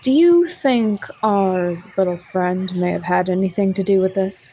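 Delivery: quiet whisper in character voice. Whispering in character to a companion, away from another party member: whispering in character. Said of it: "kinda whispers to Lucian".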